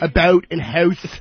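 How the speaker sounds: taunting, jeering put-on Midwestern accent. Mocking the listener's Midwestern accent; mocking put-on Midwestern accent.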